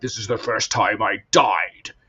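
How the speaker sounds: dramatic, deep movie trailer announcer voice. Describing a game's advertising, the speaker quotes its narrator in a movie trailer voice. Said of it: "movie trailer voice guy going like".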